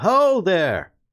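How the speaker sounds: loud, high call projected across a distance. Voicing a rider calling down from a good distance off: calling down from a distance. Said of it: "they call down from a, a good distance off".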